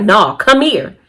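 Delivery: bossy delivery full of attitude. Retelling a man calling her in from the sliding door: imitating saying it with attitude. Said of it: "he said it with an attitude".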